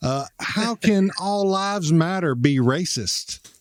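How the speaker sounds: slow Texas drawl. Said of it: "put on the Southern voice that I've got from Texas".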